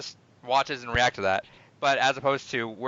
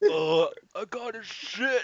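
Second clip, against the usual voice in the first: put-on very drawn-out, slow, high old man voice; 7 semitones higher, 4 dB quieter than usual. Retelling a friend's line in an old man voice. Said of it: "in the old man voice".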